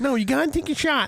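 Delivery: put-on voice pushed up as high as it goes. Retelling being told to take a shot: high Poinsett voice. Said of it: "The highest Poinsett voice".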